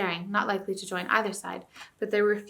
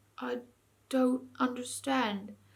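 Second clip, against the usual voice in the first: throaty, bewildered mumble; 4 semitones higher, 4 dB quieter than usual. Narrator reads the last words of a bear lying on the ground, throaty mumble. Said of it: "mumbled in its throaty voice".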